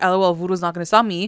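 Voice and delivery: ordinary talk, nothing marked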